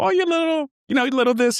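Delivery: high falsetto voice, going up. Speaker acts out how people belittled the speaker: high falsetto. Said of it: "you hear the falsetto of my voice go up".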